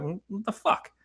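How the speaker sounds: high, hushed, baffled tone. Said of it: "they're gonna go".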